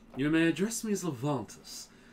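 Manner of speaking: hoity, snooty, high-class voice. A player demonstrates their Dungeons and Dragons character's voice, hoity voice based on Loghain. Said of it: "I wanted it to sound hoity".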